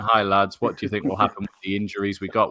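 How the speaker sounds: plain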